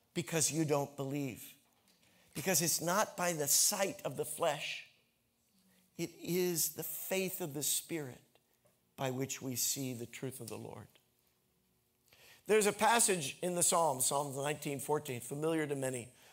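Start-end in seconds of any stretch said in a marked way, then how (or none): 0.1-10.8 kind, compassionate, patient, unhurried pleading tone. Acting out words to the disciples, Jesus speaking with compassion. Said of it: "I think he says it with patience".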